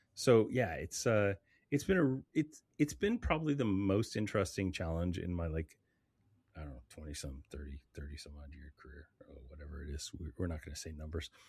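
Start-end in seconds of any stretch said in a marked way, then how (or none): 6.9-11.3 voice dropped low, soft and hushed. Reflecting on a long career in conversation, low voice. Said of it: "so your voice got so low".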